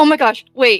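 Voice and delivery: put-on excited tone. Playing a character who finds a bread recipe: acted excitement. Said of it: "she gets really excited".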